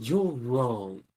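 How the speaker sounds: smug voice. Voicing a character's line after switching into a smug mode: smug voice. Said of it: "the smug bitch mode".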